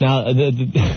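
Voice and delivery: stuttering false start, repeating the. Introducing another caller on the line, stuttering over his words. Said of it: "I'm stuttering".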